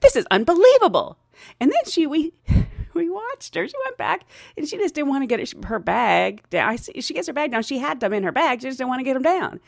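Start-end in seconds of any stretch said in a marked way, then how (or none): 0.0-1.2 higher, louder indignant huff in disbelief. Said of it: "she was like".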